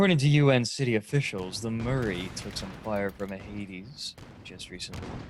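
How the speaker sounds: public radio newsreader-style delivery. Switching into a mock news report mid-conversation, in NPR news style. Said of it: "We're gonna do this N P R style now".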